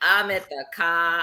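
put-on Boston accent, dropped r's. Joking that viewers will not hear many R's this season: imitating a Boston accent. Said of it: "y'all are not gonna hear a whole lot of ours".

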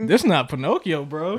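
usual speaking voice

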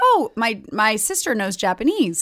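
ordinary talk, nothing marked

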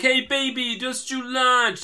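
drawn-out preppy dude voice. Describing scenes of a film character's new role: imitating a preppy guy. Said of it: "preppy guy".

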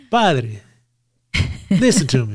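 put-on Italian accent. Rehearsing words for someone to say to their father, put-on italian accent. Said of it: "I'm still doing the Italian".

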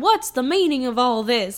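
vague, faint Southern drawl. Retelling a line someone said in a scene: John Goodman vague Southern accent. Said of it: "a vague Southern accent".

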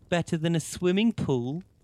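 very high, loud cooing voice. Narrator reads Annaliese answering a smirking Santino, cooing. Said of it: "Annaliese cooed".

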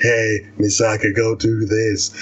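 low, deep, whispery voice.

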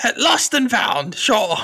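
squeaky, very high goblin creature voice. Game master voicing a goblin centaur answering the players, in a goblin centaur voice. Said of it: "I've got to remember my goblin centaur voice".

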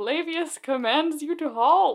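acted-out high, commanding yell. Retelling a line a pursuer on a chariot yells: imitating a yelled command. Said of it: "the dude yells".

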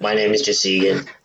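put-on blocked-nose nasal voice. Mimicking the other speaker, whose nose is stuffed up; imitating a stuffed-up voice. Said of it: "you sound like this".

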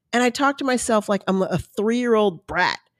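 ordinary talk

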